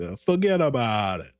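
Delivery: put-on Italian accent delivered in wiseguy style. Recapping how Tony reassured the Don, Tony's Italian accent. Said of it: "in the Italian accent".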